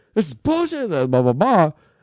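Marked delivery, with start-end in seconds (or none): 0.1-0.8 screaming, pitched higher. Retelling breaking up a fight, retelling a scream. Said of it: "I started screaming".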